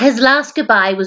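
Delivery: plain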